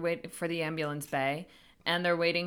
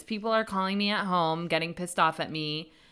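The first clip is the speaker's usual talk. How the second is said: usual speaking voice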